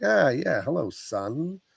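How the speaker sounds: slow, smooth, charming vampire-like delivery. Retelling a movie scene, imitating the vampire Jerry: smooth-talking vampire Jerry voice. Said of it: "Mister Smooth Talker vampire".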